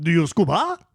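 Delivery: put-on French accent.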